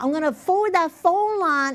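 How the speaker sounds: Southern American voice. Speaker retelling a woman's phone message, imitating her southern accent. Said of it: "(SOUTHERN ACCENT)".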